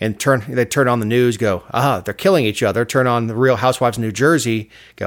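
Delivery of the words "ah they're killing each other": put-on alien voice. Imagining aliens watching Earth's news and giving their reaction, mock alien voice. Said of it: "little green men who are buzzing earth".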